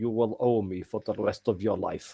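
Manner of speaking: muttered under breath. Player describing his character walking away after chopping the binding, muttered under his breath. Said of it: "say under his breath".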